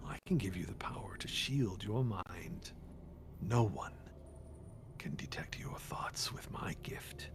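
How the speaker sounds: dark, hollow, echoing whispered voice. A game narrator voices an unseen being speaking to the players: dark echoing Savnok voice. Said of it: "sort of a dark, echoing voice".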